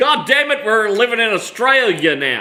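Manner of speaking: bad put-on American accent. Joking about posing as expat Americans in Australia, the speaker does a really bad American accent. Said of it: "I'll put on a really shitty American accent".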